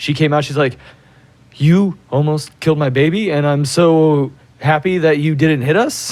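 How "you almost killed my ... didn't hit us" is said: slow, tearful sobbing crying voice. Retelling what a crying lady said after a near crash: imitating a crying woman. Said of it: "the lady, like, was crying".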